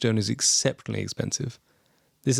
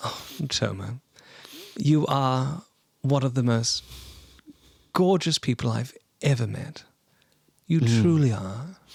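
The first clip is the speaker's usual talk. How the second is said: lovestruck, melting, swooning smitten tone; 2 semitones higher than usual. Voicing a character gently touching a companion's cheek, swooning. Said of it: "there is a visible swoon".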